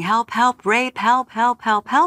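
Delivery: repeated high-pitched cries, held in. Retelling fighting off an attacker, reenacting screaming for help. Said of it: "I'm now screaming".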